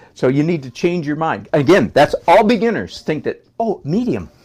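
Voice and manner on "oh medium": high, naive, clueless-sounding beginner's voice. Imitating how a beginner thinks about adding medium: mocking a beginner's thinking. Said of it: "I'm being so offensive right now".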